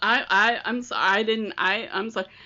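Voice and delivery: sheepish, stammering, stumbling and halting delivery. Retelling how the speaker's dad apologized to the grandpa, imitating a sheepish stammer. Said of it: "he's starting to stammer".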